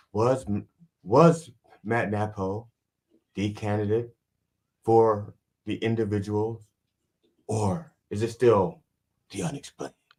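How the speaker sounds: theatrical, fully dramatic delivery. Describing how the show's host must say the unexplained: William Shatner impression. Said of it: "he has to say it in a certain way. So he might go like".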